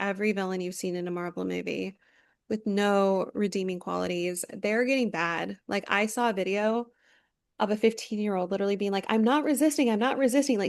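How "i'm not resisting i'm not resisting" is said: higher-pitched mock scream. Retelling a video of a fifteen-year-old: imitating someone screaming. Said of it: "screaming it".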